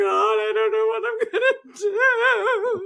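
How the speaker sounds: acted, very high, tear-soaked sobbing wail. Retelling praying at the end of the dock: imitating own past crying. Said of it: "crying my eyes out, going".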